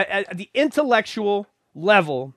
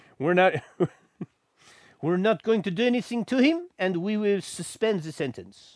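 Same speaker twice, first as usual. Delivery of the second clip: fake Swedish accent drifting into French sound; 6 dB quieter than usual. Mimicking the Swedish court's ruling, in a bad Swedish accent. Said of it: "That's not very good Swedish. That sounded more French than Swedish".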